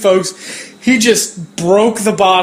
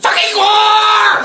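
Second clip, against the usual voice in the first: put-on high, slow shouted cartoon teen yell. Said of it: "review the Guar Show as Beavis and or Butthead".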